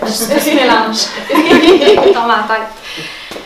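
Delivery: slow, laughing, nervous, stressed aside.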